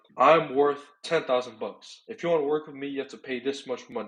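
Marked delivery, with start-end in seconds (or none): 0.2-2.0 matter-of-fact falling pitch on bucks. Demonstrating an assertive statement, with falling intonation on bucks. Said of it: "ending off on a lower intonation ... a lot more matter of fact".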